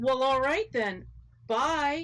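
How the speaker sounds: vacant, far-away, dazed, trance-like voice. Retelling what a man said after the speaker ran away: imitating someone in a trance. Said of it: "It was like he was in a trance".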